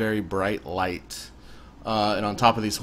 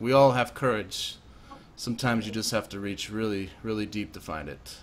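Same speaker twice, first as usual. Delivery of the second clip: very sincere, earnest, heartfelt, no irony at all. Voicing an NPC with a hand on a player's shoulder: very sincere. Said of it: "he says this very sincerely".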